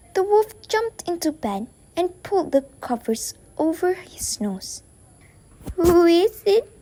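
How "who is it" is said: put-on loud, croaking, crackly old voice. Reading the story aloud, the wolf in bed answers the knock at the door in a crackly voice. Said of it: "he called in a crackly voice".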